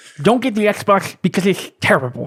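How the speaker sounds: high, swooping, exaggerated over-the-top nerd voice. Recalling a store worker, quoting him: over-the-top nerdy clerk voice. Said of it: "way over the top with everything".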